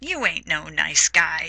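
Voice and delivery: normal talking voice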